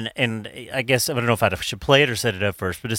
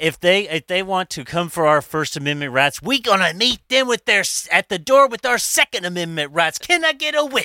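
fiery revival preacher's scream, pitch climbing; 8 semitones higher than usual. Acting out a preacher rallying his church, imitating a screaming preacher. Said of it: "That hurts my throat to do that".

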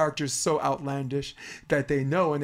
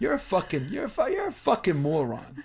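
put-on Italian American New York voice, higher pitch; 5 semitones higher than usual. Showing how a comic insults someone on stage: Andrew Dice Clay voice. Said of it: "I'll say it like Andrew Dice Clay".

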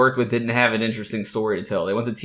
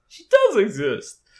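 mock-shocked cartoon voice, much higher, louder; 11 semitones higher, 4 dB louder than usual. Introducing his girlfriend, a host quips in the M&M's Christmas commercial voice. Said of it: "Is that the voice?".

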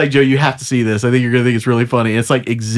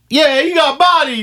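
shouting, higher; 12 semitones higher than usual. Playing a henchman backing up another speaker's line: yelling. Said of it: "Who are you yelling that at?".

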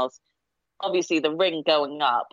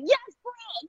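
put-on jubilant, very high cheering shriek. Retelling watching the match, imitating own screaming: imitating own screaming. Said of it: "I was just screaming".

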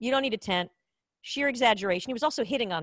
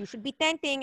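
put-on Filipino accent, matter-of-fact tone; 4 semitones higher, 4 dB quieter than usual. Retelling what a man told them, in a put-on Filipino accent. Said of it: "with my Filipino accent".

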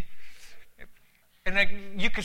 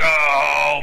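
deep, loud demonic voice, "home" stretched out; 4 semitones lower, 7 dB louder than usual. Retelling what a stranger in a telephone booth said to him, demonic voice. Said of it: "in this demonic voice".

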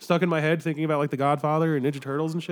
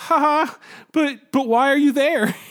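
put-on very old woman voice, much higher, louder; 10 semitones higher, 6 dB louder than usual.

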